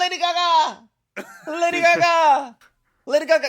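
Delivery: put-on shouting. Drag performer recalling passersby shouting at them from cars, retelling people yelling. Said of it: "Just yelling".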